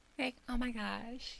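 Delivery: put-on girly voice, very high and soft. Told the disguised voice didn't sound like them, the speaker does a put-on girl voice. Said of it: "my girl voice".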